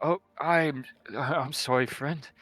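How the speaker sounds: muttering under breath. A game character apologizes to a friend, muttering under breath. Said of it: "He kind of mutters under his breath".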